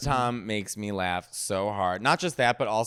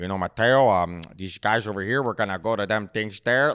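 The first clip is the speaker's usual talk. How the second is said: put-on thick, heavy Chicago accent; 4 dB louder than usual. Imitating how uncle Mike talked, in uncle Mike's thick Chicago accent. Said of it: "Like that was literally how he talked".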